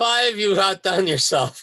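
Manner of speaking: speaking through laughter. Answering a call to read next while still laughing: laughing while talking. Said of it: "If I can stop laughing".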